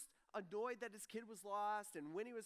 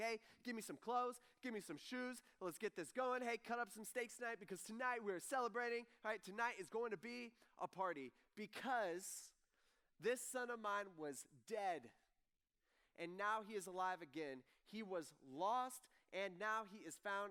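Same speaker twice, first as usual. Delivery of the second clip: ordinary talk, nothing marked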